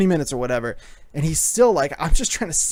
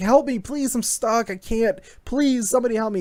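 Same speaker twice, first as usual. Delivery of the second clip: put-on child crying and screaming, much higher; 7 semitones higher than usual. Recounting seeing a trapped kid, acting out his cries: mimicking a kid crying, screaming. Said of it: "He's crying and screaming".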